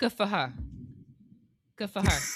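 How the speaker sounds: accent from Long Island. Telling someone you don't blame her, quoting what we say, in a put-on Long Island accent. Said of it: "in the Long Island accent".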